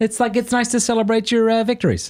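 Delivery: very high-pitched put-on American accent. Joking mid-conversation, the speaker puts on an american accent. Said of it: "That's my American accent".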